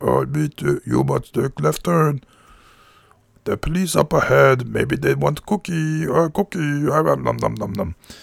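hungry puppet monster voice, "nom" stretched long. Speaker replays the road-trip directions they set up: Cookie Monster voice. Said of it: "it's Cookie Monster".

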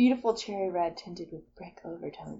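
rushed, soft, sensual delivery. Reading wine tasting notes aloud: reading sensually. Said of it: "I was trying to do it sensually".

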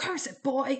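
curt, loud, high-pitched snapping tone. Narrator reading a coach addressing a boy: snapped. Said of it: "he snapped at Jason".

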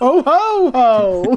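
loud, booming ho-ho. A relative called out by the group shows his Santa accent: Santa voice. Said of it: "This is my Santa accent".

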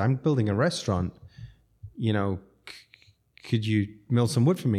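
ordinary delivery

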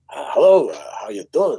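put-on swooping, Yiddish-tinged New York accent. Describing a comedy bit about a 2,000-year-old man being interviewed, in a New York Yiddish accent. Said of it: "sort of New York Yiddish accent kind of character".

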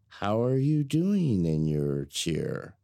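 put-on slow, sing-song baby-talk voice. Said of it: "I would catch myself going into baby talk".

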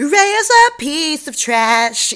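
mocking put-on voice, high and slow.

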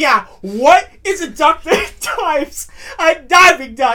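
gleeful, proud, joyful punchline delivery, loud and drawn out. Retelling telling a joke to an office staffer: imitating own proud joyful delivery. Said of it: "with so much pride and so much happiness and joy".

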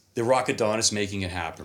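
normal talking voice

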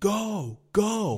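put-on exasperated shouting. Retelling how she yelled whenever the speaker hit the brakes: retelling her yell. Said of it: "she's yelling".

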